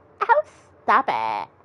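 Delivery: put-on Valley Girl accent. Acting a scene, the speaker answers a flowery compliment in a Valley Girl voice. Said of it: "I'm doing the Valley Girl voice for this".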